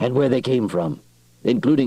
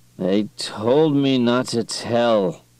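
dull, flat, drugged mumble; 3 semitones higher than usual. Narrator reading a drugged character's line under interrogation, dull drugged mumble. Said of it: "mumbled in a dull, drug-saturated voice".

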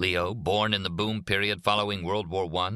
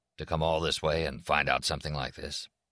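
ordinary delivery

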